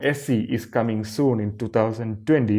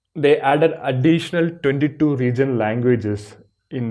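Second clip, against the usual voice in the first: usual speaking voice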